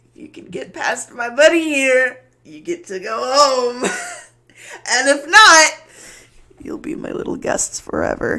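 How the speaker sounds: very loud, high speech through giggles. Voicing a giggling creature that taunts the party: giggling while talking. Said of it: "giggling over top".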